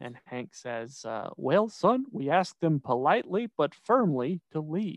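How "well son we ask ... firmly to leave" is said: cartoonish father voice. Retelling a King of the Hill scene, the father answering his son: Hank impression. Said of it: "That was a pretty good Bobby and Hank".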